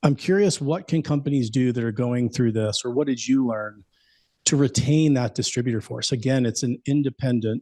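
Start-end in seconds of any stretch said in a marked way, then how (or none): 6.9-7.6 emphasizing independent. Answering a question about keeping a sales force, stress on INDEPENDENT. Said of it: "I'm emphasizing the word independent".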